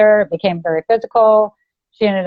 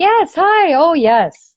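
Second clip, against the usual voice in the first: very slow, higher-pitched, put-on casual chatty voice; 8 semitones higher than usual. Retelling a phone call while held captive: imitating acting casual on phone. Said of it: "I'm acting on the phone, like, everything's fine".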